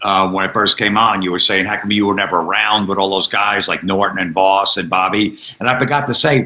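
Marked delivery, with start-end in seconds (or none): none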